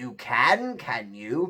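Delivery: low, growling bear voice. Narrator reads the bear answering the gingerbread man: growling bear voice. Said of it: "growled the bear".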